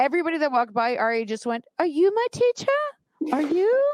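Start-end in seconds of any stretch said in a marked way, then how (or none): 1.8-3.9 put-on very high little British kid voice. Speaker retells what Ari asked everyone walking by, imitating Ari's British accent. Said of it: "And he has a British accent".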